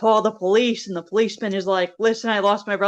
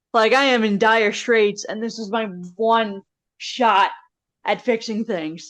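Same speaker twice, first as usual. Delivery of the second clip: ordinary delivery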